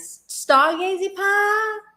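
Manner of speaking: put-on slow Southern American accent.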